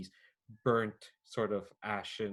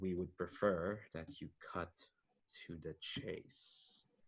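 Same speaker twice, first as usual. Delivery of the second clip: very slow, soft, drawn-out, measured, deliberate delivery; 3 semitones lower, 7 dB quieter than usual. Game master voices agents urging Agent Bubbles to cut to the chase, speaking really slowly. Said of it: "they're saying this really slowly as well".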